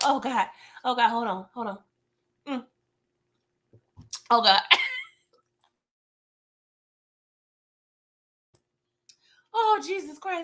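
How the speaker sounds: choking mid-sentence. Speaker talking to an audience mid-story, suddenly choking. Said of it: "I'm choking on myself".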